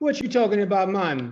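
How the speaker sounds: put-on Caribbean accent. Joking about not understanding someone speaking patois, Caribbean accent. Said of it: "could do a nice Caribbean accent".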